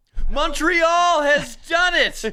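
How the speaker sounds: excited play-by-play announcer. Showing how to deliver breaking overtime news on the radio: excited radio goal call. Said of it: "you have to deliver it with excitement".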